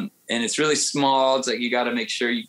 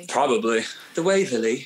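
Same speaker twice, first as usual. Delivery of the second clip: put-on British accent. Suggesting a good British-sounding name among friends, in a British accent. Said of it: "You have a good British accent".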